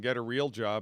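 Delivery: ordinary delivery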